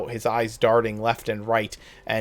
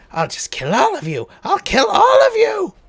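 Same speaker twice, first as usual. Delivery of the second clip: very high, very loud, shrill, grating wicked screech; 9 dB louder than usual. Voicing a foe as it growls in anger, in a high-pitched, gratingly wicked voice. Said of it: "high pitched uh, and yet gratingly wicked voice".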